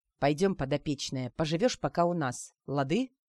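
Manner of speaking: plain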